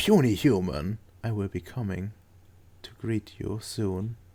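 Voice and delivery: soft, quiet whisper. Voicing a whisper the player hears at session end: soft whisper. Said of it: "it turns into some softer whisper".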